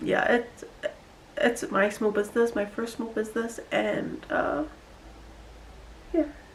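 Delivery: emotional, choked-up, breathy half whisper. Thanking family and friends for supporting a first small business, getting emotional. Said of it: "I'm getting emotional".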